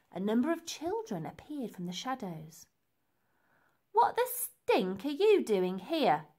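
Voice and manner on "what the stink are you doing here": swooping, demanding, challenging tone. Big Joe confronts Elsie as children appear from the shadows, demanding. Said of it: "demanded Big Joe".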